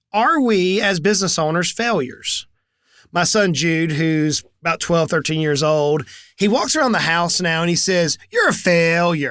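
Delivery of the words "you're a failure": slightly snarky, with a bit of snark. A parent tells what their son says around the house: imitating Jude's snarky voice. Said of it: "he actually says this with a little bit of a snarky voice".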